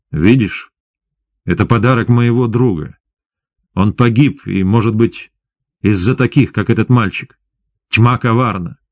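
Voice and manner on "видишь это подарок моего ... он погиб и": usual speaking voice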